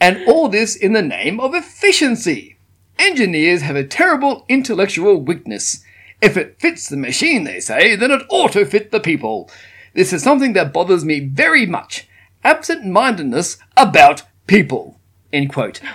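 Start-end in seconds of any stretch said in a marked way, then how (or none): 0.0-15.0 raised voice with a put-on English accent. Reading out a man's quote aloud, in an English accent. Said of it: "he didn't have an English accent".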